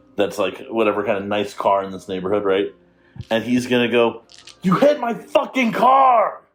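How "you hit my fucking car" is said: enraged, very high, slow, rage-filled yell. A narrator voices a man accusing a mother of hitting his car; enraged. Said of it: "he's going into basically rage mode".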